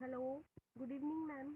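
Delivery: faint, barely audible.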